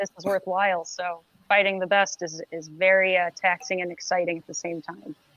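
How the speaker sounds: dry, soft, flat, sarcastic-sounding deadpan monotone. Speaker answers in a flat deadpan that sounds sarcastic. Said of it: "you sound sarcastic".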